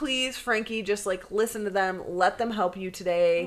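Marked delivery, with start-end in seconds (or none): none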